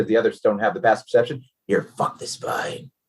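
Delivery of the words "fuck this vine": very low, hushed whisper, barely under the breath. Voicing a creature that mutters while ripping up a vine: very low whisper. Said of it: "you hear in a very low whisper".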